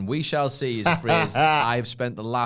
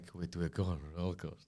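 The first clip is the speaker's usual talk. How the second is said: rushed, fast, barely audible half-whisper; 6 semitones lower, 15 dB quieter than usual. The speaker quotes what he said to her in a message, half-whispered. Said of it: "why are you whispering?".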